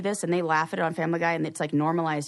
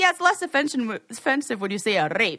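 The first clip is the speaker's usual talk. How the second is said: put-on the word rape in Scottish accent, pitched up; 5 semitones higher than usual. Retelling a comedian's joke about a sensitive word: imitating Beth Stelling's Scottish accent. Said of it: "she does it with a Scottish accent".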